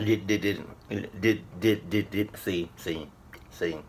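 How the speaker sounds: stammering, repeating each word, spooked. Speaker recalls a crack loud enough to make them jump, stuttering, creeped out. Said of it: "you can hear it in my voice, because whenever I start to stutter".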